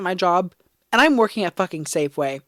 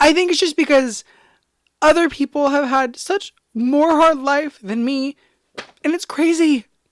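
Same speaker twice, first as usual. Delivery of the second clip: tearful, pitched-up speech through crying; 6 semitones higher than usual. Trying to be sincere to viewers and unable to think straight, crying. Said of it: "I don't know why I'm crying".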